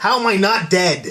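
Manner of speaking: put-on elderly man's voice. Joining in a Stan Lee bit, doing a Stan Lee impression. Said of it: "ninety-five years old now".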